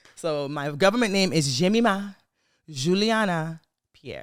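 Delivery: Haitian-style pronunciation. Telling the listeners their full government name, with Haitian pronunciation. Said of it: "the Haitian pronunciation".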